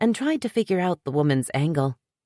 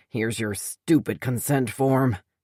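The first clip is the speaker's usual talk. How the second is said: low growl through the words; 4 semitones lower than usual. Reading a story where a character throws over a form: growling. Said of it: "he growled".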